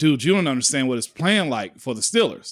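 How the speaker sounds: ordinary delivery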